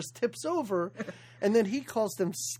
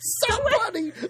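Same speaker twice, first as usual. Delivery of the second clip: acted, shrill, very high, loud screaming cry; 13 semitones higher, 5 dB louder than usual. Discussing a movie's opening, imitating a water skier screaming. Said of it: "She starts screaming".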